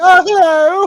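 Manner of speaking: very high, very loud, belted comic voice. Retelling a film scene with a gangster on the phone: imitating a Miss Doubtfire voice. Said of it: "doing a Miss Doubtfire impression or something".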